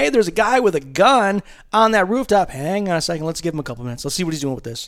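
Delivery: loud, high-pitched mock yell.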